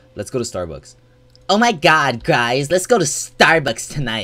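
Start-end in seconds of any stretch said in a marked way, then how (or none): 1.5-4.3 put-on shrill, loud young woman voice.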